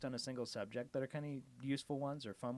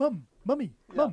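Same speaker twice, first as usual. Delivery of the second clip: cartoon character voice, higher; 9 semitones higher, 11 dB louder than usual. Retelling a story to listeners, doing a Stewie impression. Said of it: "You're a little too accurate at that".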